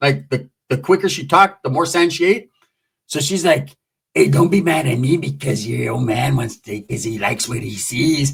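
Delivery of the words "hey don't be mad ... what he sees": very low, gritty, gravelly voice. Retelling an argument between two women, imitating Changa's gravelly voice. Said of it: "Changa had like a gravelly voice".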